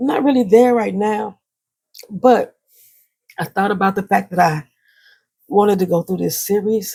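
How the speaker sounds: choked-up voice, catching, close to breaking. Telling viewers about dealing with depression, the speaker is choked up. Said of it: "Forgive me if I'm getting choked up".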